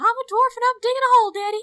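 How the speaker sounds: shrill, high-pitched yell. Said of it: "in my best [name] voice".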